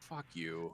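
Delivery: muttering under the breath. Staring through a letter from a friend, muttering under breath. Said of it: "I just say under my breath".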